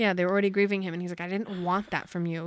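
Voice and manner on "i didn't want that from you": ordinary delivery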